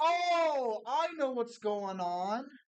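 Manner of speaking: shouting. Working something out aloud after a sudden outburst, yelling. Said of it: "Would you stop yelling?".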